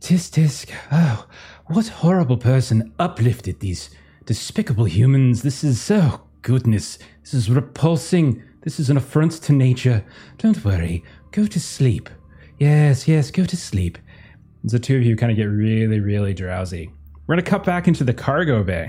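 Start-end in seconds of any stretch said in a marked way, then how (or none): 0.0-14.0 put-on voice of a cat. Voicing a cat hologram that speaks to two sleepy players: hologram cat's voice. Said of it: "you can hear the voice once more".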